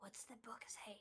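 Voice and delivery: hushed whisper. Playing a character in a tabletop game, whispering a question to Shay. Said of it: "I would also whisper to Shay".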